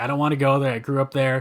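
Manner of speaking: ordinary talk, nothing marked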